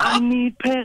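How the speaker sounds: mock screaming. Retelling a mishap on stage, calling out to Bowman: retelling a loud scream. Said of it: "I'm screaming so loud".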